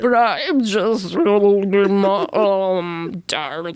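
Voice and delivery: put-on high-pitched, gurgly, watery voice. Retelling a goo creature in bed claiming to be the speaker's mom, high watery gurgly voice. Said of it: "speaking in a high-pitched, watery, gurgly voice".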